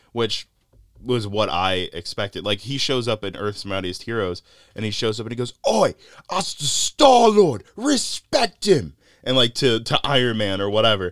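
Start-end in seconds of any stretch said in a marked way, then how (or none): 5.7-9.0 very high, very slow, angry Cockney growl. Describing Star-Lord's earlier cartoon voice to a listener, imitating Star-Lord's angry Cockney. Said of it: "angry British man kind of sound".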